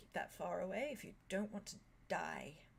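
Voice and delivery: strained, hushed, restrained voice. Retelling a scene, the speaker acts out a man warning Arya, imitating a strained voice. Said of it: "like his voice is strained".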